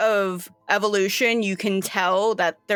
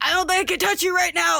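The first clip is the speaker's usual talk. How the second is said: panicking, freaking out, higher; 10 semitones higher than usual. Voicing River, who is freaking out over smoke tendrils: freaking out. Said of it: "River's just like".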